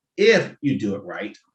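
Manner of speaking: slow, stressed if you do it right.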